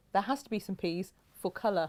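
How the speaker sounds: ordinary delivery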